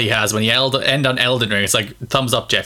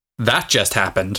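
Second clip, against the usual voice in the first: mock-deadpan delivery, pitched much lower; 3 semitones lower than usual. Recapping a showcase, quoting the reaction after a gameplay sequence, Jeff Keighley's deadpan retold. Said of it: "who said deadpan".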